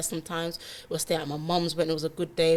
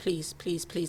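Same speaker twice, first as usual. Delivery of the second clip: acted tearful pleading, imitating crying; 3 dB quieter than usual. Retelling begging someone who was shouting at her for coming home late: retelling a tearful plea. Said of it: "you can see I'm crying".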